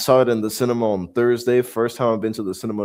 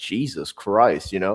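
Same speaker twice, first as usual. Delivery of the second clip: plain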